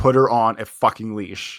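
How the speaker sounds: put-on, loud, aggressive delivery. Retelling telling a dog owner to leash his dog: retelling an aggressive order. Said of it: "I think I said it aggressively enough".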